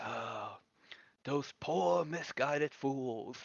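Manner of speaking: slow, hammed-up, over-the-top theatrical delivery. Playing a character speaking once the door closes: hammed-up theatrical delivery. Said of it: "ham it up and say".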